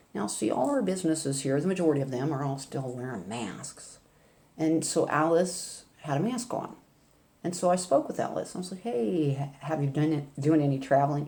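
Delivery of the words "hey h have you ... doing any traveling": acted ironic, pointed, sarcastic tone. Retelling asking someone about traveling: imitating own sarcastic question. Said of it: "in a sarcastic way".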